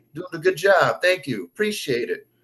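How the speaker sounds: put-on very strong, laid-on Jersey accent. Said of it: "that very Jersey accent".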